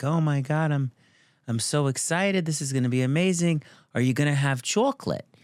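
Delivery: put-on New York accent, pitched high. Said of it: "she has this New York accent".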